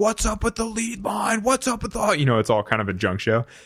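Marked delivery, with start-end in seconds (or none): 0.0-2.1 loud, high-pitched shout. Retelling yelling to a partner over tangled ropes on the Zodiac, retelling a yell. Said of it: "I'm yelling back and forth with my partner".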